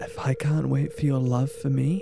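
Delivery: whisper, very close in the ear. Reading aloud a line that is whispered in your ear: whispering. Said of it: "I'm sorry that I'm about to whisper".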